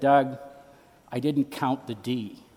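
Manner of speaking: mumbled whisper. Retelling what the English teacher leaned over and said: imitating a mumbled whisper. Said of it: "sort of mumbled in a whisper".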